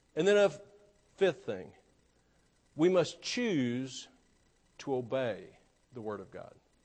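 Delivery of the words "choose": 'choose' said with strong stress. Speaking to an audience about obeying the Bible, stress on 'choose'. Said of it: "Emphasis on choose".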